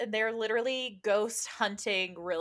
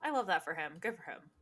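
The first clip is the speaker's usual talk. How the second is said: low, soft, condescending, patronizing tone; 4 semitones lower, 6 dB quieter than usual. Reacting to news that someone wrote a comic, the speaker praises him: patronizing tone. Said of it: "I don't know why that sounded patronizing".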